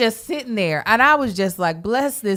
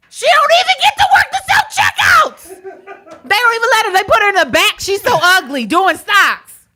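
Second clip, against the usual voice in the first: pretend shouting, higher and louder; 11 semitones higher, 6 dB louder than usual. Acting out yelling from the background during an apology: mock yelling in background. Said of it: "That'll be me yelling".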